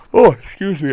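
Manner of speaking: high, loud yawn through the words. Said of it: "I'm yawning".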